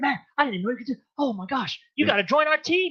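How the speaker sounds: mock wound-up, amazed, high, excited gushing. Retelling someone's reaction to fast push-ups in a test: imitating someone excited. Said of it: "he's so, so excited".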